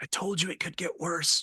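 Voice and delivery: soft, hushed stage half-whisper. Voicing a character beside the player, both watching in horror: half-whispering. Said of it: "Bradley whispers to you".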